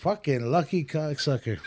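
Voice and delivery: ordinary talk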